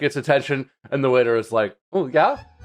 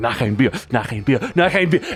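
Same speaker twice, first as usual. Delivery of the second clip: mock worked-up, agitated tone. Retelling a man getting worked up ordering another beer, imitating someone worked up. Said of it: "gets all worked up".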